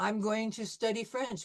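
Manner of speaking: normal talking voice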